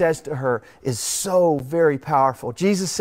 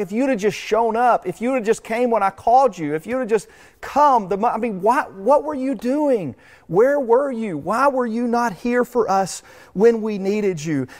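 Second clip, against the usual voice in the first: play-acted, high, exasperated, frustrated pleading; 7 semitones higher than usual. Voicing the woman's statement to Him in verse 21, acting out frustrated pleading. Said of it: "You can almost hear the frustration in her voice".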